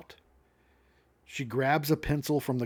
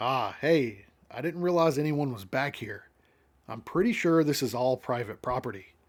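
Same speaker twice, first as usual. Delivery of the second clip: normal talking voice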